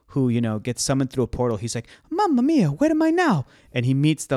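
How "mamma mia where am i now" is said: very high-pitched, loud game-hero voice. Imagining a movie scene where Mario arrives through a portal: Mario voice. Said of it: "a live action actor who plays Mario".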